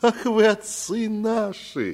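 very high, very slow, drawn-out exclamation. Narrator reads a character answering another's question, exclaiming. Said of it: "воскликнул Сафрон".

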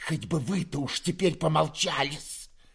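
hissing words, venomous and spiteful. Reading a novel aloud, the narrator voices a character's line, hissing. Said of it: "прошипела Перепелицына".

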